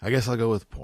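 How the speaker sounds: hopeless, resigned, despondent, dejected tone. Speaker picking the closing topic when asked to choose, despondent. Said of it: "That's a very despondent voice when you said".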